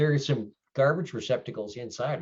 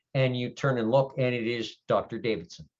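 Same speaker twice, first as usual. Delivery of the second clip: ordinary delivery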